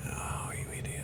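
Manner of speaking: soft, whispered, scolding tone.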